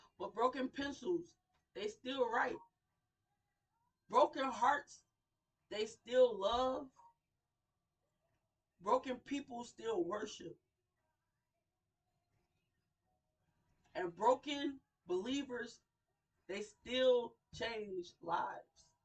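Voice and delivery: trying not to cry, holding back tears. Addressing the crowd, trying not to cry. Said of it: "I'm trying not to cry".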